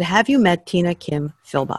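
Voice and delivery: ordinary talk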